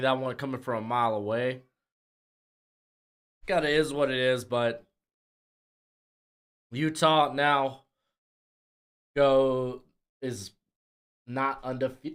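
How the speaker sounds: speaking while hiccupping. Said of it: "I got the hiccups".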